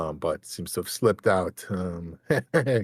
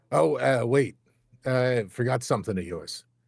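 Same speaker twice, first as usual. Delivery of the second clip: calling out loudly, projected to carry; 4 semitones higher than usual. Voicing someone at the bar calling after the leaving party: shouting across a room. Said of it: "you hear a shout from the".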